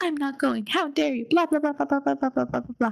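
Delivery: high, spoiled, bratty tantrum meltdown. Retelling a character's meltdown in the car about prom: imitating a bratty meltdown. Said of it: "I'm talking brat meltdown in the car".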